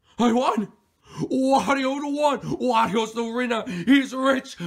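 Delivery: ecstatic, high, loud yelling full of joy.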